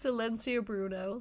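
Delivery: ordinary delivery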